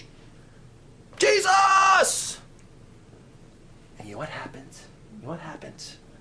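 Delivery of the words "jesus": high, loud, desperate yell. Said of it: "yelled that name".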